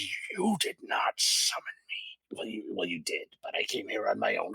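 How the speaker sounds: hushed, menacing snarled voice. Storyteller voices a figure confronting the player's character, snarling. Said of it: "she snarls at you and says".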